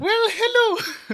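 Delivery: put-on Irish accent, pitched very high. Asked for an Irish accent, the speaker greets the others in an Irish accent. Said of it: "hit me with an irish laser".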